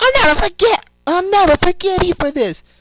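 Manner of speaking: very high, very loud, shrill full-out scream. Retelling how a character screams in a game: imitating Cream screaming. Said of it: "When she screams, she's like".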